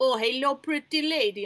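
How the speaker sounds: slow, very drawn-out, put-on Russian accent. Speaker imitating how Russian people speak English, in a put-on Russian accent. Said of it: "Russian people speak English and they're like".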